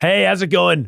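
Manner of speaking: overly gruff, gravelly voice pushed hard, kept high. Taking turns trying impressions of Dwayne Johnson, too-rough Dwayne Johnson impression. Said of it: "that's too rough".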